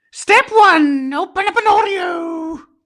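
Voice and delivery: goofy, very high clown voice, "Oreo" stretched. Recording a voiceover of a numbered step, in a clown voice. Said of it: "try and make a clown voice".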